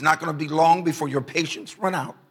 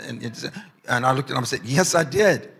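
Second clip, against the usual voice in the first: ordinary talk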